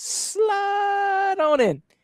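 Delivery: very high, slow, drawn-out sing-song call. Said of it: "And then Joe says".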